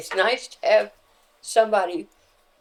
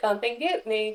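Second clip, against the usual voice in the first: strange, small, disguised put-on voice; 2 semitones higher, 3 dB quieter than usual. Retelling what the other player said while spinning: Jimmy's strange little voice. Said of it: "it wasn't his normal voice".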